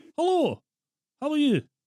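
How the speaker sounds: fake Scottish accent, very high and very loud. Prank calling an air force base: put-on Scottish accent. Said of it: "You putting on a Scottish accent?".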